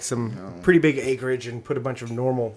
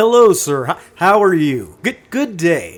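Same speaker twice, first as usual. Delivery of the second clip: polite customer-service phone voice, higher and louder; 5 semitones higher, 6 dB louder than usual. Showing how someone in the service industry talks, polite customer-service phone voice. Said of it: "You got like the phone voice".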